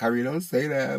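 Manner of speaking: crying woman's voice. Retelling a painful leg injury, imitating mom crying. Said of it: "I just remember my mom crying".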